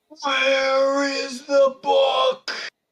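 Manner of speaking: very high, loud, booming bellow. Narrating a character who looks down and speaks, bellowing. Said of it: "He looks down and bellows".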